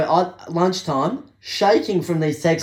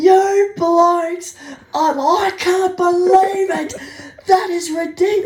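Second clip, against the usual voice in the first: very high, flaming-mad, acted-out furious ranting outburst; 13 semitones higher, 4 dB louder than usual. Retelling how the coordinator was losing his mind: imitating a furious coordinator. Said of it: "absolutely flaming".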